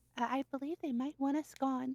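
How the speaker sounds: very low hushed whisper. A character looks at the party and tells them, in a very low whisper. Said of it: "she says in a very low whisper".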